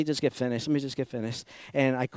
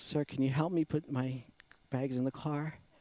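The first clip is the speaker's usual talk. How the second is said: put-on weak, feeble voice, quieter; 10 dB quieter than usual. Retelling what an older woman asked him as he loaded his car, imitating a weak voice. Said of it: "this very, like, weak voice".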